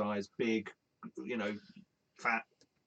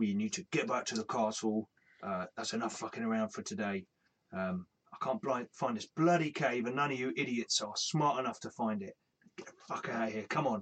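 ogre character voice. Voicing an ogre ordering his group back to the castle: ogre voice. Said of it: "you hear the ogre saying".

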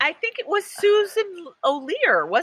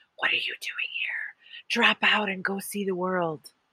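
whispered, quieter and lower; 7 semitones lower, 7 dB quieter than usual. Retelling what another person whispered in their ear, whispered. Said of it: "whispers in my ear".

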